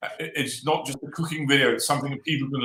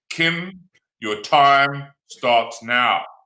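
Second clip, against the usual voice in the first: stern, loud, very slow judge voice; 5 dB louder than usual. Starting Kim's time as a judge would, in a stern judge voice. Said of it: "in my sternest judge voice".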